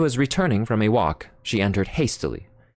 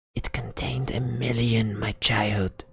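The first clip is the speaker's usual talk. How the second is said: voice dropped right down, lower still; 4 dB quieter than usual. A father speaks to his daughter about the stolen desk, in an even lower voice. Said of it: "in a still lower voice he said".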